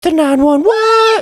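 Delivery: very high, loud, squawking blurt. Introducing the next segment, voice accidentally squawking.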